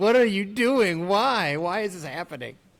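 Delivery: put-on high, exasperated screaming in disbelief. The speaker recalls watching a player's games: retelling screaming at the tv. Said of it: "I'm screaming at the T V".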